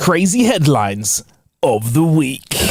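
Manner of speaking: slow, with each word drawn out. Announcing the headlines segment after being asked, in a Clarkson voice. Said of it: "proper Clarkson-y".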